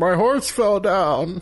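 put-on weepy sobbing policeman voice, high and slow. Retelling how a policeman called him, imitating a crying policeman. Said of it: "was, like, crying".

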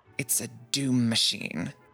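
confiding, leaning-in tone. Narrating a character who leans in close as if someone's listening, secretive. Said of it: "she leans in very close".

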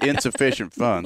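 mock yelling. Retelling a clerk declining a card in front of everyone: imitating someone yelling. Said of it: "slams it down on the counter in front of everybody and yells".

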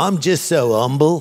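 clumsy Cockney accent with dropped h sounds. Mocking someone who keeps talking about how humble they are; bad Cockney Michael Caine impression. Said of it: "You're Cockney".

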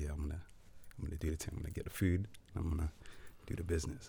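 hushed R&B-style voice. Retelling going into her house for the food, in a whispery r&b voice. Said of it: "You're doing whispery R&B".

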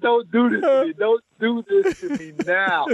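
very high-pitched, screamed, begging voice. Retelling a hotel-room night, pillow over face: retelling screaming into pillow. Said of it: "I'm screaming at the pillow".

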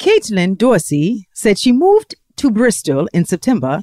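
British accent drifting into a Jamaican accent. Asked to use an accent for the whole segment, British accent mixed with Jamaican. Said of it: "I didn't mix British with Jamaican".

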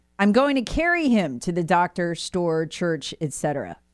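ordinary talk

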